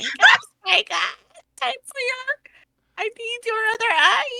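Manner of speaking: very high, shrill, cackling crone voice. Game master voices a hag waking spike, hag voice. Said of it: "I was using a hag's voice".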